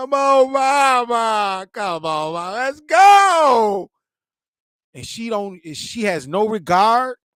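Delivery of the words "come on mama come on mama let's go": put-on high, slow, tearful little boy voice, "go" drawn out. Describing a small son pleading with his mother in public, imitating a crying little boy. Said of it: "he's crying like".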